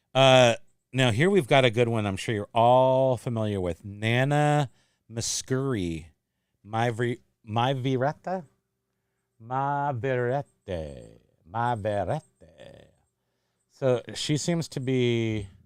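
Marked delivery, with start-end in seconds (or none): 9.3-12.2 slow, loose, sort of Italian accent. Reading a French title aloud: sort of Italian accent. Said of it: "I was doing it in sort of a Italian accent".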